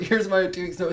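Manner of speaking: plain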